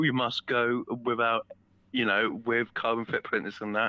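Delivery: normal talking voice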